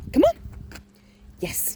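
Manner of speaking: voice lifted very high. Training the dog Amelia, calling her, raised pitch. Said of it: "when I raise the pitch of my voice".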